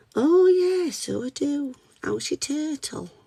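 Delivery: very high and slow cartoon-style voice. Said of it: "accidental impression of Candy Cat from Peppa Pig".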